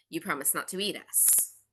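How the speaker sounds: hoarse whispering voice. Narrator voices a flower speaking to the party, raspy whispering flower. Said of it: "one of them whispers in kind of a raspy voice".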